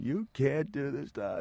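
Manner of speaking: play-acted, high, scolding, yelled scream. Retelling a phone call home after a match: imitating someone screaming. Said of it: "They're screaming".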